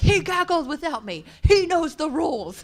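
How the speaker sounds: furious, very loud, high, shrill angry yell. Retelling an angry reply to a question on a plane: retelling own angry reply. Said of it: "Beck, why are you so angry?".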